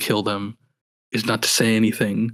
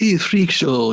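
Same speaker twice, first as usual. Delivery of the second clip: high-pitched Eastern European tough-guy accent; 6 semitones higher than usual. Retrying the henchmen's line after asking how to do it: Eastern European thug accent. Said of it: "more like that, right?".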